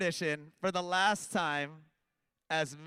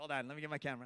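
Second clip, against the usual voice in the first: usual speaking voice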